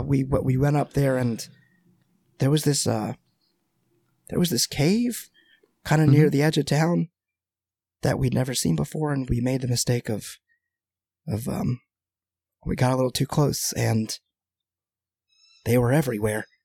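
speaking very quietly. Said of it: "he kind of very quietly is like".

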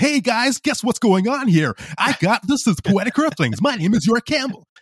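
very high, pumped-up, hyped radio announcer voice. A podcaster recalls how he opened his early episodes, in a radio host voice. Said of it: "I'd be like almost like a radio host".

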